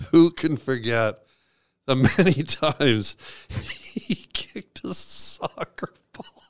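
put-on emotional voice. Reading a mock eulogy aloud, pretending to be emotional. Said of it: "Sorry, I'm emotional".

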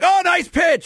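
overzealous, very high-pitched holler.

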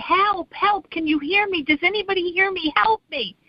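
high, loud yelling. Telling a joke about a man hanging from a vine: retelling a yell for help. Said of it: "he starts yelling".

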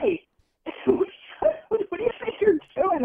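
playful scolding voice. Speaker retells yelling at a mouse crossing the wall: retelling a yell at a mouse. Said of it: "I'm like yelling at this mouse".

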